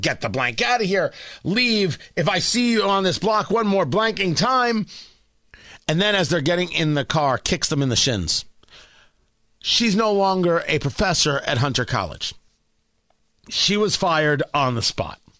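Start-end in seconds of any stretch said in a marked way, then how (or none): 0.0-4.9 contained, mildly angry yell, held back in volume. Retelling what a woman yelled at a reporter and photographer: imitating someone screaming. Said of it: "screaming at them, yelling at them".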